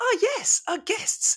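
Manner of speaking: eerie, smiling, very high-pitched whisper. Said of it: "She goes".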